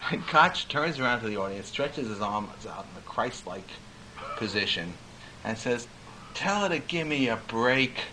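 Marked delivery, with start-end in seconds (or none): 6.3-8.0 small, plaintive, mournful, sad little voice. Retelling how Koch turned to the audience, imitating Koch's plaintive sad voice. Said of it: "in the most plaintive, sad voice, a little voice".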